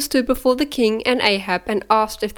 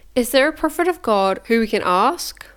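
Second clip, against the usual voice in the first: usual speaking voice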